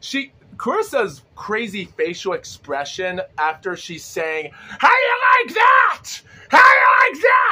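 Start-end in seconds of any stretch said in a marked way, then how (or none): 4.5-7.5 shrill, very high, very loud full-blast scream. Retelling a champion screaming at the camera after the fight: imitating Clarissa Shields screaming. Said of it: "Clarissa just screams at the camera".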